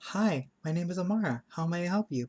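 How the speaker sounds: very high, brought-up voice. The speaker demonstrates the voice used when interacting with someone: raised, higher voice. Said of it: "I always bring my voice up like this".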